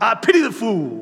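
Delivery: loud, slow, deliberate, weighty, emphatic delivery. Quoting a favourite line from a show, doing the mr. t voice. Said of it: "'cause that's how he talks".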